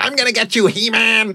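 high, shrill villain bellow, pitched way up. Retelling something the speaker once shouted, bellowing as Skeletor. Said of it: "I was bellowing".

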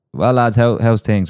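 put-on south Dublin accent, called out loudly. Retelling a man shouting to the group from behind as he passed, in a south Dublin accent. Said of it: "he had it in a real southern accent of Dublin".

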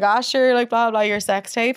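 play-acted, jokey, light teasing tone. Retelling what a guy at a bar said: imitating a jokey remark. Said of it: "said it in a jokey way".

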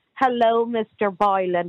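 put-on mocking, patronizing tone. Mocking how the other speaker sounds on every show: imitating a patronizing tone. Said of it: "you are so patronizing".

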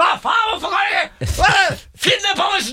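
very high, drawn-out, acted-out angry scolding tone. Retelling how he started scolding you while you dried the remote, cursing scolding. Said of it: "så kjeftet han allerede i gang".

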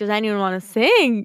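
ordinary delivery

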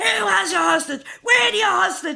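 put-on panicked yelling. Retelling her phone reaction to her son's hostage call: retelling screaming on the phone. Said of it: "I'm screaming on the phone".

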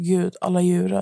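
ordinary talk

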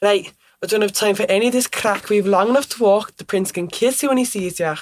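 Scottish-accented character voice. Performer giving a brief taste of their show role, in a scottish accent. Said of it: "I speak in a Scottish accent".

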